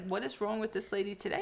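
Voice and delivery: ordinary talk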